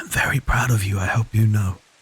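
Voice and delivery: soft, close stage whisper. Voicing a character carried by spirits, whispering to someone below: whisper. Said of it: "I whisper again".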